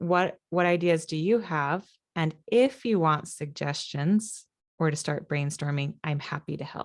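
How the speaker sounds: ordinary delivery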